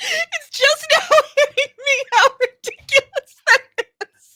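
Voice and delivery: very high, loud, talking through giggles. The speaker gets the giggles mid-conversation, giggling while talking. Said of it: "I'm getting the giggles".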